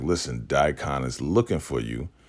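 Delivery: ordinary talk, nothing marked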